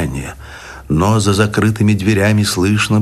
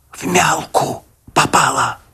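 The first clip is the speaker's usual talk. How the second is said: confiding, conspiratorial, secretive, high stage whisper; 6 semitones higher than usual. A man answers the doctor's question: whispered as if a secret. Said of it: "шепотом, как будто по секрету".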